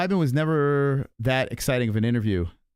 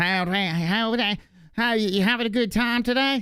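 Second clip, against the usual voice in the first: weird put-on nasal Arizona accent, high, drawn out; 9 semitones higher than usual. Comparing regional accents and mocking the Arizona one: high nasal Arizona accent. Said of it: "weird high pitched nasally".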